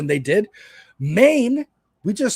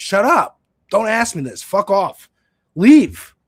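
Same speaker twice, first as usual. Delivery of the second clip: mock combative tone, higher and louder; 3 semitones higher, 4 dB louder than usual. Imitating someone being questioned who wants to be a judge: imitating someone combative. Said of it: "he's being combative".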